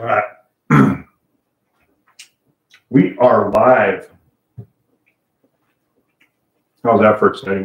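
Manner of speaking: talking while chewing. Host going live to viewers while still eating lunch, talking while still chewing. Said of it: "Sorry, I'm still chewing".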